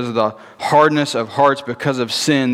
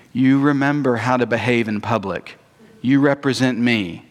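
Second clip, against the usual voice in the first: mock quiet, gentle whisper. Acting out a parent reminding a child before going out: imitating a parent whispering gently. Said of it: "whisper very quietly and very gently".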